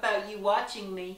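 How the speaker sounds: ordinary delivery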